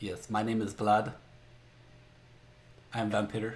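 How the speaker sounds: acted vampire voice, very slow. In a made-up scene, a vampire at the door introduces himself in a Vlad vampire accent. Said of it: "I gotta find that accent".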